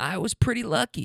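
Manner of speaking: put-on voice of an elderly woman. Retelling what an injured woman said, old woman voice. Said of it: "How do you guys like that old woman voice?".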